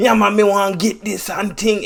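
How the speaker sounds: put-on thick Jamaican accent, very high-pitched and loud. Retelling a jamaican game character giving a mission, in a thick jamaican accent. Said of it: "super, super Jamaican, like thick accent".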